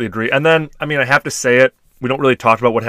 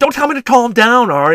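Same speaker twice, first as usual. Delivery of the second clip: overwrought, hysterical outburst, pitched very high; 12 semitones higher, 4 dB louder than usual. Recapping a show, speaker acts out a mother snapping at Ari: mock-hysterical. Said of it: "She's hysterical".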